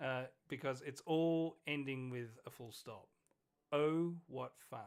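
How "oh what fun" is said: loud, heavy, dripping put-on sarcasm. Saying a film's title aloud after praising it: put-on sarcastic tone. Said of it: "That's the sarcasm".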